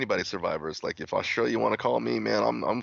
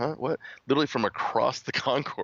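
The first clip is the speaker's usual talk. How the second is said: plain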